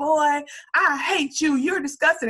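put-on Southern accent. Retelling a sketch's audition line, imitating a southern accent. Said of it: "he's Southern, like, he's spitting".

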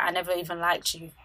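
plain

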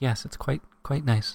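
talk-radio host voice and delivery. Savoring a cup of chai, joking in an NPR host voice. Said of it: "You're like an N P R host now".

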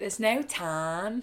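put-on Scouse accent. In an interview, trying out a put-on Liverpudlian accent. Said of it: "That's my Liverpudlian accent".

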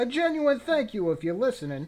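fake New York accent, pitched very high. Podcast host thanking listeners at the end of the show, in a put-on New York accent. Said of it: "I decided to do that in a New York accent".

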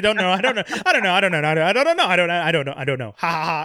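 mock awkward, nervous, flustered laughing. Imitating an actress dodging a question, then imitating awkward nervous laughing. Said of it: "then she starts laughing like a fucking weirdo".

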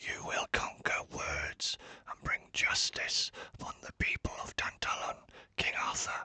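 sore, rasping, scratchy, hoarse, barely voiced whisper. Narrating a story, the departing spirit speaks to king arthur in a scratchy whisper. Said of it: "the spirit whispered back, his voice scratchy and sore from not being used for a long time. ... his voice scratchy and sore from not being used for a long time".

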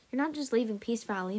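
ordinary delivery

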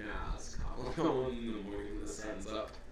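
mock whisper, laughing.

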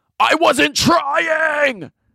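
put-on angry shout, very high, drawn out. Retelling how he answered her after losing: imitating him yelling. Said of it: "And he fully yells at her".

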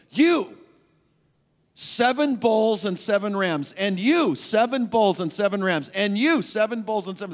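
loud, high, commanding decree-like voice. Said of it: "It's the numbskull friends that God says".

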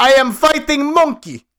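high, slow, drawn-out Russian woman's voice. Retelling a movie scene, quoting the sword-fighting lady: imitating the russian lady. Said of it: "the Russian lady ... And she goes".

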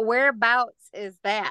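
slight put-on Southern American accent. Asking a guest from Huntsville, Alabama where that is, in a put-on Southern accent. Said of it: "I try to put on my little Southern accent".

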